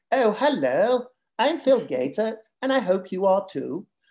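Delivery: deliberate, put-on Southern English accent. Imitating how the speaker's kids do the speaker's accent: imitated Southern English accent. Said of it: "they do a Southern English accent".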